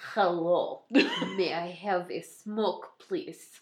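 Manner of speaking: fake Russian accent with a swooping pitch. Joking about a man asking for a cigarette in an alley: fake Russian accent. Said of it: "I sound like someone who's pretending to be Russian".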